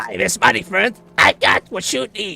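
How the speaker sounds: very loud, rough, shrill, rasping goblin voice. Asked to do the goblin, the speaker performs a goblin line, goblin voice. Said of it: "Do the goblin".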